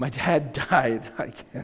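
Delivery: speaking through laughter. Right after a light remark, the speaker jumps to something heavier, laughing. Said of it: "I'm laughing because I just went from humor to my dad died".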